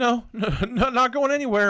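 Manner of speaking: stammering, voice pitched way up. Narrating a second-person story aloud, voicing Mark, stammering. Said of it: "Mark stammers".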